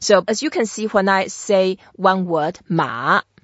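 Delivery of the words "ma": ma dipping low then rising, third tone. Chinese lesson showing a single word alone; third tone on ma. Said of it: "it's very obvious. It's the third tone".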